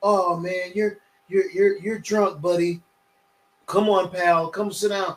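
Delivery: put-on gentle, coddling, babying, sweet-talking coaxing tone. Acting out handling a drunk friend at a party with kid gloves: acting out gentle coddling. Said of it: "handle him with no kid gloves".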